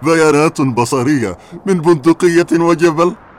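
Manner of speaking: scoffing, mocking, high, loud sarcastic jab. In a drama, a man scoffs at the other speaker's warning, with sarcastic mockery. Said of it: "استهتارك هذا وسخريتك هما أسوأ ما فيك".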